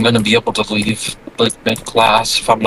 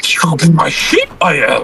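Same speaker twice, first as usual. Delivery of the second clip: put-on character voice, high and swooping; 5 semitones higher than usual. Doing a character voice after a long break, Yoda voice. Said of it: "I don't know if I can do the voice".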